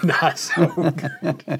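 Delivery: high, slow laughing repeat.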